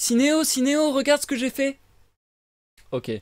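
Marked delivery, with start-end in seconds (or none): 0.0-1.8 very high, little wooden toy-puppet voice. Calling to the character who adopted them in the role-play, Pinocchio voice. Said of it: "J'ai la voix de Pinocchio".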